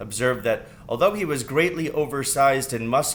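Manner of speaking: ordinary delivery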